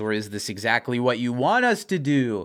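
normal talking voice

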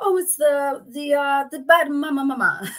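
put-on heavy Portuguese accent. Quoting a friend's catchphrase the way he says it, thick portuguese accent. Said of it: "he's got like a thick like Portuguese accent".

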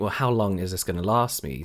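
plain

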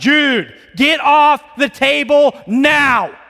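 stern, loud, slow, booming dad voice. Recalling ordering someone off the table: acting out a booming dad voice. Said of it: "dad voice comes out".

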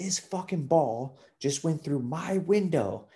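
acted furious, high, drawn-out ranting. Speaker retells a woman storming into a golf clubhouse, mimicking her super pissed. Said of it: "like super pissed".

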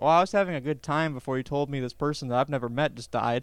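ordinary talk

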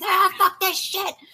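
put-on maniacal screaming. Recalling running out at people, acting out screaming like a maniac. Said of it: "screaming like a maniac being like".

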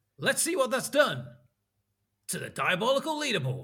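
"what" stressed, high and loud. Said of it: "you should say it with, like".

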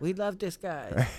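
put-on Cambodian accent. Imitating locals talking about a friend: put-on Cambodian-sounding accent. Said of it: "I don't know why I was put an accent on".

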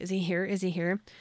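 ordinary talk

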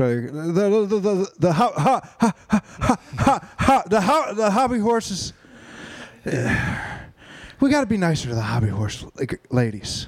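heavy halting stutter with false starts, high and slow. Trying out a bad Joe Biden impression, starting with the stutter: bad Joe Biden impression. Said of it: "the best way to start doing a Joe Biden impression".

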